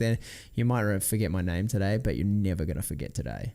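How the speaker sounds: ordinary delivery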